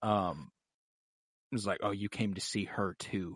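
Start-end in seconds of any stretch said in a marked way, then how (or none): 1.8-3.4 openly revolted, disgusted, contemptuous and scornful delivery. Retelling what the mother Selyse says to the king: imitating Selyse sounding disgusted.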